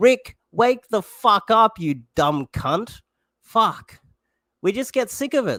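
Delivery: fed-up, angry ranting outburst. Ranting about the major parties while addressing someone directly, angry. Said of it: "Sorry for getting angry".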